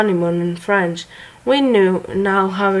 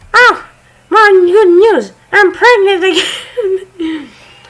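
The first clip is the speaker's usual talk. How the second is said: very high, loud put-on girlish voice; 11 semitones higher, 6 dB louder than usual. Reading out the original poster's update: girly voice. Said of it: "let me actually make a girly voice".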